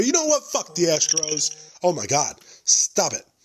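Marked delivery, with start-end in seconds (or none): 0.0-1.6 worked-up, fired-up heated swearing outburst. Speaker who just said they need to calm down, now heated. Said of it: "I was going to get too heated about the Astros".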